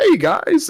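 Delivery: cheery, jolly, very high ghost voice. Imagining a jolly haunted mansion ghost greeting the group: jolly haunted mansion ghost voice. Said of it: "jolly old, like, haunted mansion ghost where he's like".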